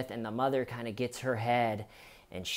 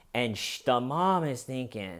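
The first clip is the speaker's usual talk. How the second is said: plain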